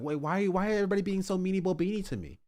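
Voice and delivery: high-pitched, derisive, mocking delivery. Retelling a streamer's reaction to criticism in a mocking Pirate Software impression. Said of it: "Pirate Software was like".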